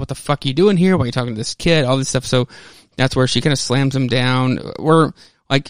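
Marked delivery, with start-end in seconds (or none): 0.0-1.8 put-on, enraged, demanding outburst. Retelling a story scene where a character gets angry: imitating Tommy furious. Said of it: "then he gets, like, furious".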